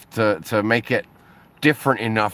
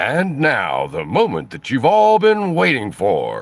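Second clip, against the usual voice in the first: put-on big-event announcer voice with swooping pitch; 2 semitones higher than usual. Talking about reading ads for money, a speaker demos an announcer voice. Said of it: "putting on the voice".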